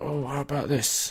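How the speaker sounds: put-on gruff dwarven voice. Trying out a quieter dwarven voice for a game character: weird smoky confused dock worker voice.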